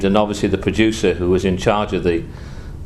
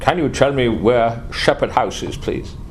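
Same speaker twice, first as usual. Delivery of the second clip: put-on German accent in English; 3 semitones higher than usual. Retelling a gentleman asking the speaker for directions, German accent. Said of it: "said in a German accent".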